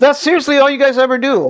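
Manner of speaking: high, fed-up, exasperated shout. Arguing with the others about whether water curves, yelling. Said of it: "why are you yelling".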